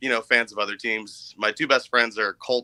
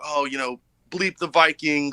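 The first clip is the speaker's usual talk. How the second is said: mock screaming, much higher; 5 semitones higher than usual. Retelling what people leaning out car windows yelled on the way to the stadium: imitating fans screaming. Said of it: "screaming at me".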